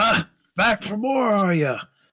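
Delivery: big booming shout, very loud and very high. Narrating a tabletop game, a familiar voice calls out to the players: booming voice. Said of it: "you hear a booming voice".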